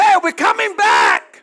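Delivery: loud, high heavenly shouting.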